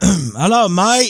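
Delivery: clumsy, bad put-on Australian accent, high and loud. Speaker greeting a viewer from Australia, in a bad Australian accent. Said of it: "There's my Aussie".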